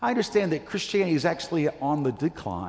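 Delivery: quick, bad British accent.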